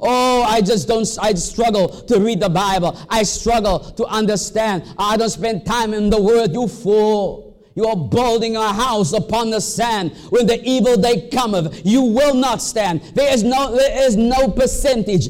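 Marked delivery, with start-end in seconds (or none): none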